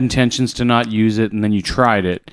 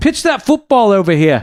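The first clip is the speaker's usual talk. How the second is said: very high-pitched put-on Australian accent; 10 semitones higher, 3 dB louder than usual. Riffing with the others on accents, he says the line in an Australian-sounding accent. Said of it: "That sounds Australian".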